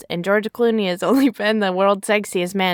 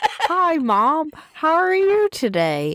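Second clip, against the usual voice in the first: put-on voice, high, swooping, slow; 7 semitones higher than usual. Greeting Mom at the start of the talk: Julia Roberts impression. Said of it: "that does not sound like you".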